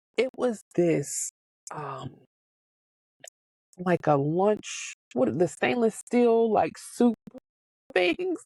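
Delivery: slow, tearful speech, crying. Speaker recalls what made them cry the most, crying while talking. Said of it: "I'm crying now".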